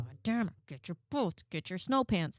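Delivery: acted exasperated anger. Recounting a child coming downstairs without boots again: retelling getting mad. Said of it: "I find myself getting like mad".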